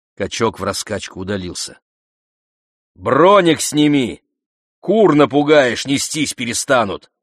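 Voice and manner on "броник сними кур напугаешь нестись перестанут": raised, high-pitched shout. Davron calls after a man walking away, shouting after him. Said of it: "крикнул Даврон вслед".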